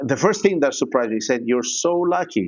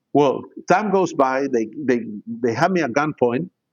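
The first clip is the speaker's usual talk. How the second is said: usual speaking voice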